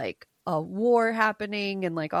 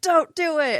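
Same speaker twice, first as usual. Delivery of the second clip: play-acted, raised, pitched-up yelling; 8 semitones higher, 5 dB louder than usual. Retelling a book's plot, a man warning her: imitating someone yelling. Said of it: "yelling at her".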